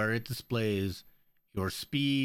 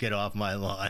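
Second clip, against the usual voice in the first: put-on grumpy, cranky old man voice. Asked where the grumpy old man sound is, doing the grumpy old man voice. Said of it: "Where's the grumpy old man sound?".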